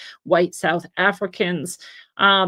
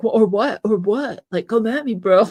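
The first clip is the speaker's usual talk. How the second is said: mock taunting kid voice, louder; 2 semitones higher than usual. Retelling how a kid kept pushing and challenging a cop who asked for identification. Imitating a taunting kid. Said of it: "He's like good humored".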